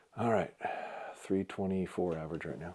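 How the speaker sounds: quiet, very soft, hushed near whisper. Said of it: "I'm gonna be quiet for the next three arrows or just whisper".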